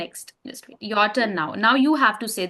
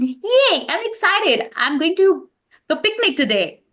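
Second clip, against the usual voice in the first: bubbly, happy, high and excited cheer; 8 semitones higher, 4 dB louder than usual. Demonstrating to listeners how to speak in a happy situation: happy and excited. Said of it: "When it's very happy situation".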